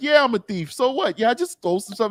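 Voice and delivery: very high, shameless bragging. Retelling thieves giving interviews outside a store: imitating a shameless thief. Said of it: "They're like".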